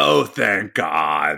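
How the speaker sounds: imitated raspy old woman's voice. Retelling his grandmother's reply when he called to say he passed the bar, cigarette-scarred voice. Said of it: "in her 75-year-old cigarette-scarred voice".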